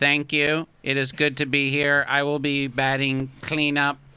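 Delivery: put-on monotone robotic voice with blended accents. Playing a robot player who greets the team: robot voice, mix of accents. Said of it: "Why couldn't they even put him, like, a better voice?".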